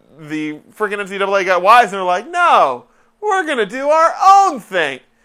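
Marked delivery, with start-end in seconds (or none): 2.3-5.0 stand-up comedian cadence, very high pitched, drawn out. Retelling what an organization said, in a John Mulaney voice. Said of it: "why am I talking like, like the comedian?".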